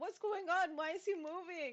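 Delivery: very slow, high, stretched-out calling shout. Voicing a character who calls to the dragon: yelling in character. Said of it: "she's gonna yell to Twilight and be like".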